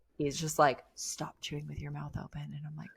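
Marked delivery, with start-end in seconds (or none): 1.0-2.4 hushed whisper spoken close into the ear. Retelling what an uncle said to a child: imitating a whisper. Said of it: "he's, like, whispering in my ear".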